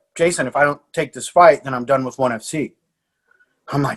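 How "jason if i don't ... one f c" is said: plain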